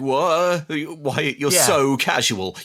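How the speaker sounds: very slow stammer, words stuck, stumbling. Retelling a film scene where Dad can't get the sentence out: imitating a stammering dad. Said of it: "sort of stammering and stuttering, like he can't get the sentence out".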